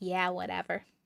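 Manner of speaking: dismissive sarcastic tone. Reading out the sarcasm ball's answer to a question: sarcastic answer. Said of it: "Sarcasm ball said".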